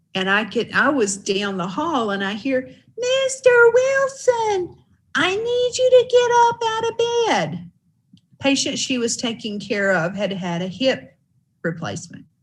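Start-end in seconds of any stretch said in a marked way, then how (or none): 2.9-7.7 very high, squeaky little voice. Retelling a caregiver calling to her patient from down the hall: squeaky voice. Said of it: "with that squeaky voice".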